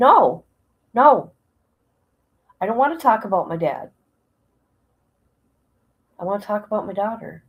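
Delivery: mock irritated tone. Retelling own reply at an appointment: retelling own irritated reply. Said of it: "I got irritated".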